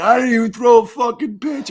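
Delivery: put-on high, loud, drunk-sounding protesting shout.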